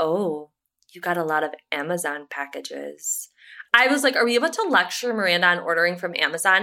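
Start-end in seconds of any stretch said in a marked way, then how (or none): 0.0-3.3 play-acted, low, slow, condescending talking-down tone. Retell what she said about the Amazon packages, imitating a condescending tone. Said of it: "condescending fucking tone with Louisa when she's like".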